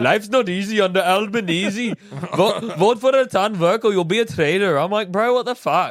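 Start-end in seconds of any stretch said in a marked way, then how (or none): 0.0-4.8 poorly done, put-on Indian accent. A speaker imitates a candidate's campaign volunteer they saw, bad Indian accent. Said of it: "that's a fucking shit Indian accent".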